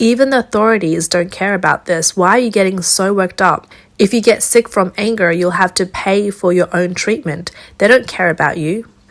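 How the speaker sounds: ordinary delivery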